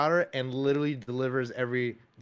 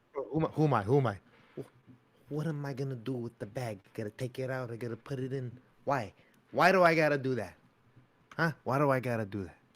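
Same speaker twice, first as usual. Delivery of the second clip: put-on Italian Brooklyn man voice. Doing a character bit, then praised for the Sebastian voice: Sebastian impression. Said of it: "That was a good Sebastian".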